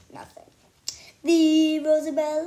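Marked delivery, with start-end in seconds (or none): 1.2-2.5 very loud, fanciest put-on voice. At dinner, the narrator repeats a friend's name to listeners who don't react, in fanciest voice. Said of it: "I say in my fanciest voice".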